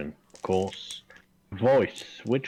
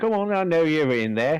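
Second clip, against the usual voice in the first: raised-pitch, coaxing tone; 8 semitones higher, 4 dB louder than usual. A player's illusion tries to get someone to open the door, imitating Danica's voice. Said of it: "Trying to impersonate Danica with a minor illusion".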